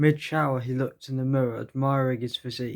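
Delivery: ordinary delivery, nothing marked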